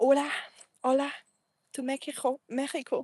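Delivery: clumsy, laid-on, self-mocking put-on Spanish accent. Sending greetings to Mexico, in a mock Spanish pronunciation. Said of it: "I'm not trying to make fun of Spanish".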